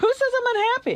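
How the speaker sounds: very high, angry voice. Responding when others say the speaker seems unhappy, sounding angry. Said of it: "do sound angry".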